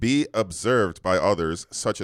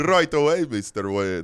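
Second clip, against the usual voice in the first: Bulgarian-accented speech; 3 semitones higher than usual. Speakers trading accents on the same line: Bulgarian accent. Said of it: "It's like Bulgarian".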